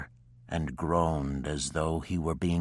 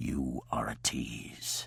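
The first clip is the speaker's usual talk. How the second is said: heavy, thick, low, rough murmur; 6 semitones lower, 7 dB quieter than usual. Narrator reads a man's reply to Jessica, thick voice. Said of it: "he said in a thick voice".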